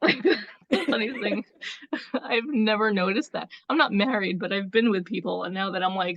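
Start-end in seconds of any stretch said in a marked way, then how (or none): 0.0-3.5 words bubbling with laughs while talking. Reacting to a funny idea about marriage, laughing while talking. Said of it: "I can't stop laughing".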